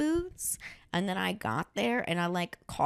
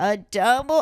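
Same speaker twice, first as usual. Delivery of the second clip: very loud stage whisper; 4 semitones higher, 11 dB louder than usual. Retelling a drunk man ordering a double at the bar, retelling a loud attempted whisper. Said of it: "he was like trying to whisper it, but it was like so loud".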